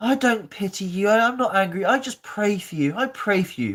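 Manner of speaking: play-acted, high, pointedly passive-aggressive pious tone. Mocking what people say about praying for someone: imitating a passive-aggressive tone. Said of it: "it's so passive aggressive when people say it".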